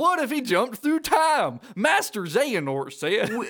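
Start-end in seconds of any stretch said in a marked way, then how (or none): 0.0-1.6 silly, goofy animated cartoon dog voice. Speaker recaps a game scene, quoting Goofy in a Goofy voice. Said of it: "Goofy voice".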